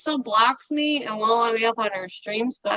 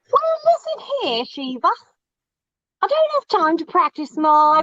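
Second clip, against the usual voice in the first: put-on British accent, much higher; 7 semitones higher, 5 dB louder than usual. Mimicking Paige B's British accent on stream; Mary Poppins-style British accent. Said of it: "that sounded more like Mary Poppins".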